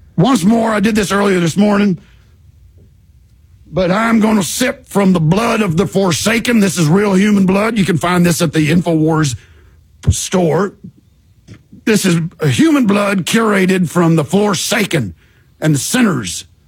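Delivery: spot-on talk-radio pitchman voice. Performing a sample bit as a parody: Alex Jones impression. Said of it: "The impression is spot on".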